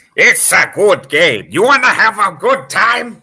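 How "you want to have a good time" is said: put-on cartoon parrot voice, higher and louder. Asking the others if they want a good time: Gilbert Gottfried voice. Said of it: "you sounded like Gilbert Gottfried".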